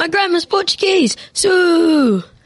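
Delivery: put-on high screamed shout, one word stretched long. Teasing the other speaker about their football goal, mock scream. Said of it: "is that why you screamed".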